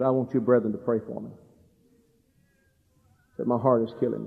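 put-on speaking through tears. Retelling a preacher's words to the brethren, imitating him pleading through tears. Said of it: "he said through the tears".

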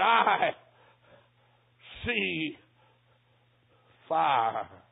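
mock quavering, trembling voice. Recounting what the man he tried to save told him, imitating a trembling voice. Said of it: "in a trembling voice".

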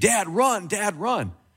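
put-on high, panicked screaming shout. Telling a hunting story, retelling how the son screamed to his dad. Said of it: "is screaming".

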